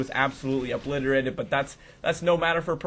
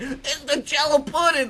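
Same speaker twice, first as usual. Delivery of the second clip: squeaky put-on voice, very high; 12 semitones higher, 4 dB louder than usual. Joking during game commentary, doing a Bill Cosby impression. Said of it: "I'm never gonna do a Bill Cosby impression again".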